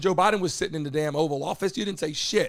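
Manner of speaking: ordinary talk, nothing marked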